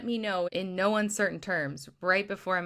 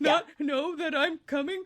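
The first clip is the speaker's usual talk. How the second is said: mock, high-pitched, tearful weeping voice; 8 semitones higher than usual. Recounting a phone call, speaker quotes her past self, retelling her own crying. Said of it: "And I am already crying".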